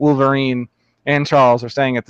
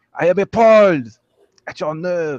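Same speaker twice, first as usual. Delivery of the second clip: thorough put-on French accent, pitched up; 5 semitones higher than usual. A game narrator voicing a very french character, in a french accent. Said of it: "So I try to do that that French accent".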